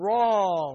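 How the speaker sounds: "wrong" hit hard, heavily weighted stress. Explaining the Hebrew word for iniquity to listeners, with stress on 'wrong'. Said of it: "Why did I emphasize the word wrong like that?".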